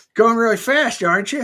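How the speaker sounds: very high, loud put-on voice. Retelling what he said to the speaker, in a Roscoe P. Coltrane impression. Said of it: "That's what he sounded like".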